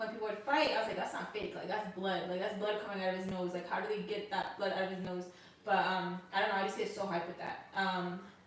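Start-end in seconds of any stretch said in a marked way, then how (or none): none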